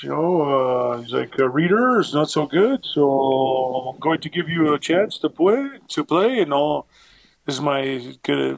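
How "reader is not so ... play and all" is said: put-on clumsy, poor French accent, drawn-out delivery. Retelling what a coach said before a flight: poor attempt at a french accent. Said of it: "poor attempt at a French accent".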